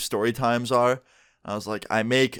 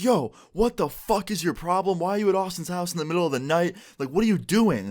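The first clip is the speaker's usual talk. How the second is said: mock, high-pitched, confrontational screaming; 7 semitones higher than usual. Retelling how a friend walked up to the porch screaming at her: imitating a friend screaming. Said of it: "just screaming at her".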